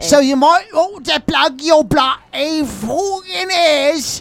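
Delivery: very high-pitched, put-on Cockney accent. Introducing a band and warning about naughty words: put-on Cockney accent. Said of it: "A good Cockney accent".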